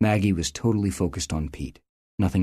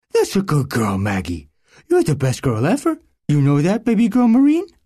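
put-on very high, squeaky baby-talk cooing; 10 semitones higher, 7 dB louder than usual. A dog handler coos to his dog Maggie, in a high-pitched squeaky cooing voice. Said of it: "Corporal [name] was her handler. ... and he cooed to her in the high-pitched, squeaky voice she loved".

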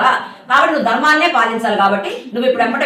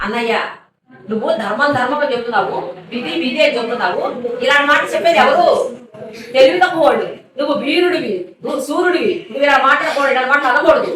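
ordinary talk

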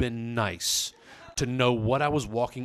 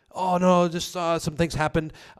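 halting, evasive stammering, hesitant hemming with raised pitch; 6 semitones higher, 4 dB louder than usual. Retelling someone's evasive answer on the porch: imitating someone hemming and hawing. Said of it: "hemming and hawing".

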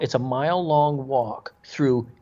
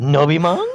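put-on cartoon dog voice, higher and louder; 3 semitones higher, 5 dB louder than usual. Retelling what a monk asked, with a Scooby-Doo voice. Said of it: "there was a little Scooby-Doo in his voice".

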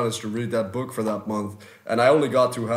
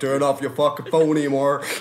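fake Oklahoman accent, louder, higher; 4 semitones higher, 4 dB louder than usual. Talking with the other guys about phone habits, in a mock Oklahoman accent. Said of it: "Oklahoman accent".

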